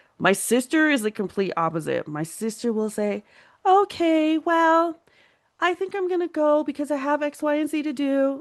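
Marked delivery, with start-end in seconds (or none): 3.7-8.4 higher, high-pitched voice. Imitating how her sister ends a conversation: imitating her sister's higher voice. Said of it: "I'm speaking that way because she has a much higher voice".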